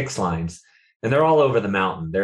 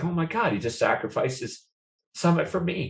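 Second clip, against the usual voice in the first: tearful, pitched-up voice, crying through the words; 8 semitones higher, 4 dB quieter than usual. Recalling a teammate giving up his summit for him: crying while talking. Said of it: "I'm crying right now".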